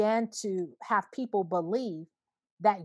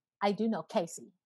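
ordinary talk, nothing marked

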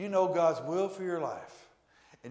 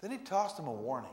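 plain

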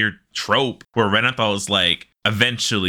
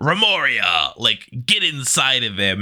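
play-acted, eager, egging-on shout; 3 semitones higher than usual. Recounting a story, the speaker acts out a man shouting at his sword. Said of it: "he's shouting like".

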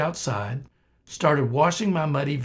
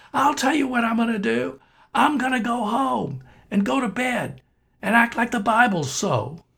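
put-on very high, loud shout; 10 semitones higher, 3 dB louder than usual. Retelling how someone answered the devil's voice: imitating someone shouting. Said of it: "shouting out loud in his car".

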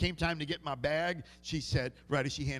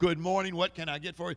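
ordinary talk

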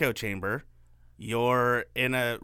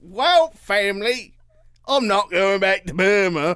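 very loud, booming, slow, put-on British accent; 8 semitones higher, 8 dB louder than usual. Acting out what a writer told his family on leave: British accent. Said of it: "that's your British accent?".

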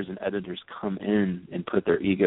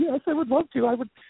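mock, very high, giddy, geeked-out fanboy squeal. Retelling accepting an offer to write an introduction: retelling fanboying excitement. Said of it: "totally fanboying and geeking out".

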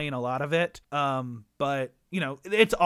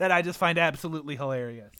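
normal talking voice

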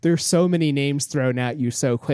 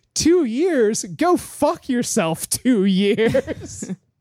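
acted out, very high, outraged, angry shout; 10 semitones higher than usual. Retelling how a woman answered a man's question, retelling an angry yell. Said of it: "And she just yells at him".

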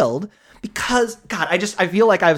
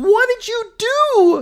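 very high, very slow, drawn-out shriek; 3 dB louder than usual. Retelling the opening scene of a horror movie: imitating someone screaming.

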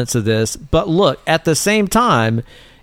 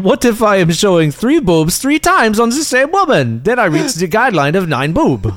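fairly decent put-on Dutch accent, pitched up; 6 semitones higher than usual. Speaker quoting a man from Holland, imitating a Dutch accent. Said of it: "He's from Holland, so I'm doing".

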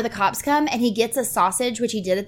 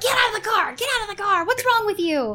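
piercing, very high, shrill shouting; 11 semitones higher than usual. Retelling a movie scene where people yell at a driver: imitating people yelling. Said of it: "they're yelling at him".

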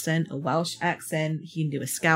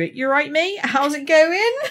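Somerset accent, pitched very high; 10 semitones higher, 4 dB louder than usual. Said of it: "I really quashed it".

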